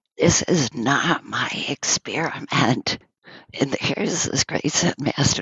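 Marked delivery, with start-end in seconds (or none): 0.2-3.0 slow, drawn-out, rasping voice. Retelling what a woman rasped during a meal meant to be silent, rasping. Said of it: "she was rasping".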